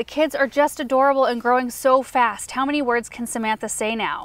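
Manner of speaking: ordinary delivery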